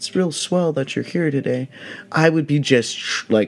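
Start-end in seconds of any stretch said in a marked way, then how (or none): 0.0-1.7 hushed, soft, wimpy whining voice. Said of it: "I would sound like an absolute little bitch".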